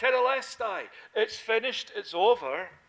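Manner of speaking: loud, ringing, declaiming outcry with voice thrown out. Preaching on what John tells of Jesus's last words, retelling a loud cry. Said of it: "He cried out loudly".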